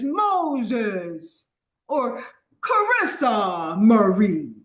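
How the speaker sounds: mock very slow, stretched-out, drawn-out calling. Retelling the call that came down in Moses' time, booming voice. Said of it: "he comes down with a booming voice and says".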